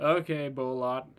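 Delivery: ordinary delivery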